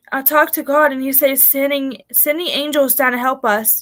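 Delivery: normal talking voice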